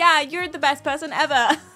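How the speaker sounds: mock insincere delivery. Acting out saying sweet wedding vows: put-on insincere tone. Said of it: "It would just sound so insincere".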